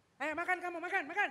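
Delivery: rough, harsh, thuggish street-tough tone. Acting out a scar-faced parent telling a child to eat: mock-harsh thuggish tone. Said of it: "kayak itu satpam, kayak preman gitu".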